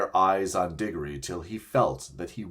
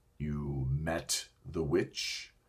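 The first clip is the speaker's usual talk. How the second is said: low, hushed, menacing growl underneath; 4 semitones lower, 8 dB quieter than usual. Narrator reads a character replying to another character's account: low voice with threatening growl. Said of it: "said Aslan in a low voice which had the threat of a growl in it".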